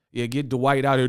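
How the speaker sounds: ordinary delivery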